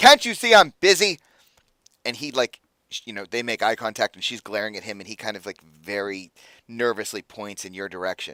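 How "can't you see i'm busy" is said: very loud, shrill, high booming bark. The narrator voices a lieutenant answering a guard who interrupts her: booming voice. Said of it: "we hear her booming voice".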